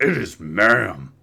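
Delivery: clearly masculine, mannish, annoyed voice. Retelling an incident, quoting a guy correcting an employee: clearly masculine voice. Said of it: "in a clearly masculine voice".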